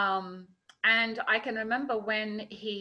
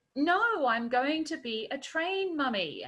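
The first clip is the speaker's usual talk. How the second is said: put-on perfect little clipped English accent, pitched up; 6 semitones higher than usual. Retelling Ollie's reply to a question, in his clipped English accent. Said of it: "in this perfect little clipped English accent".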